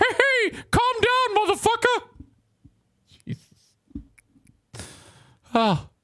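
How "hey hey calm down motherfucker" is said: very high, cartoonish mouse voice. Quoting a security guard with a mouse on his sleeve: Mickey Mouse voice. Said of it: "Mickey voice".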